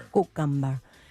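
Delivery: put-on full-blown Spanish accent. Imitating how she says cucumber: Hilaria Baldwin's Spanish accent. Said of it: "she goes full-blown Spanish accent".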